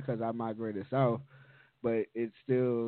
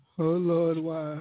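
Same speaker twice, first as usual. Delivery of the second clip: fake wailing, higher and louder; 6 semitones higher, 5 dB louder than usual. Playing the crying parent while the other speaker asks why: mock crying. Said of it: "why you crying?".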